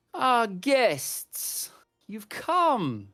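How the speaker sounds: very loud, very high, booming, reverberating, echoing call. A voice calls down the staircase to arriving guests, in an echoing voice. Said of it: "an echoing voice".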